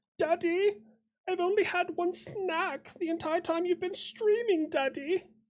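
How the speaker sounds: very high, squeaky spoiled-pet voice. Voicing the dog Fritz, who has both paws on a knee: put-on voice for the dog Fritz. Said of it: "That's the voice we use for Fritz".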